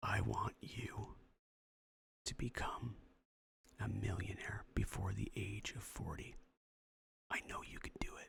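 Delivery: intimate, close ASMR-style whisper. Podcast host speaking to the listener one more time, whispered in your ear. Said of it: "let me whisper in your ear".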